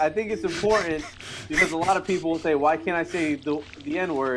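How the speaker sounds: ordinary talk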